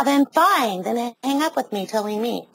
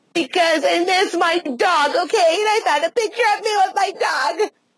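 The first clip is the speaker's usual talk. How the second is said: high, tearful speech through crying; 8 semitones higher than usual. Answering someone who asks why she is crying, crying while talking. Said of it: "I don't know why you're fucking crying".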